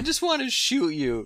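very high, tearful, sobbing crying voice. Acting out a cartoon hunter pleading with a moose: crying Elmer Fudd.

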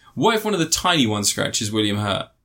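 normal talking voice

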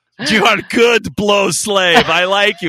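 sliding into a put-on Russian accent. Joking about a fan slave, in a Gru from Despicable Me voice. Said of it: "you sound like Gru from Despicable Me".

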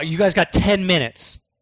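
put-on angry, pissed-off voice. Retelling own reply to visitors asking to record lines: retelling own angry reply. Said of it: "I was super pissed".

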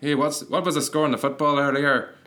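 put-on Northern Irish accent. Retelling approaching strangers on the street, speaking in a Northern Irish accent. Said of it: "my Northern Irish accent".

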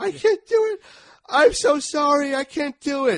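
very high, loud, drawn-out acted sobbing wail. Describing a woman breaking down, the speaker acts out her plea: imitating a crying yell. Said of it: "Yelling for her mom to come and save her".

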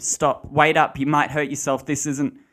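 shrill, very loud screaming. Narrator reads a man calling after a woman jogging away: screaming. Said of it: "Corey screamed".

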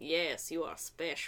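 slow, low-pitched put-on Russian accent. Acting out an old man approaching a little boy, in a russian accent. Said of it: "I love that Russian accent that you use".

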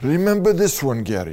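put-on heavy Italian accent. Recalling relatives turning to the young speaker, in a heavy Italian accent. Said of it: "in a heavy italian accent saying".

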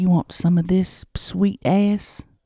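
hushed whisper. Acting out a seduction, whispering a line into the other's ear: whispering. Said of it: "Can they hear it on the T V if I'm whispering?".

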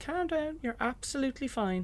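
high, soft, gentle soothing voice.

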